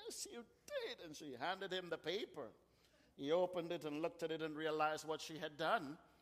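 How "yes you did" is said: acted tearful weeping, very high and soft. Telling a story, voicing the bride's reply to the groom, retelling a bride's weeping voice. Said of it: "in her weeping voice".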